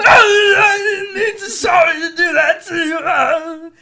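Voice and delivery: very high, very loud, very slow awkward comedy blurt. Recalling a show, the speaker imitates a comedian's bit: Bobcat Goldthwait awkward comedy voice. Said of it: "doing his awkward comedy".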